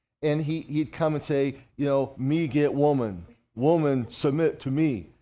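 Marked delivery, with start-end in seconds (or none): 2.2-5.0 primitive caveman voice. Retelling what a young guy would come and say, imitating Mike's caveman voice. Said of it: "he sounded like a caveman".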